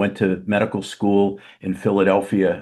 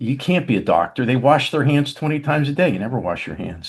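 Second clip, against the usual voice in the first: sarcastic jab with a swooping pitch; 4 semitones higher than usual. Retelling the mother's reply: imitating a sarcastic remark. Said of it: "in her sarcastic self".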